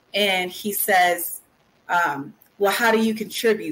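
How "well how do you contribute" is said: mock-angry, put-on angry tone. Retelling what he said while standing over me, imitating an angry tone. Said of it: "But in an angry tone".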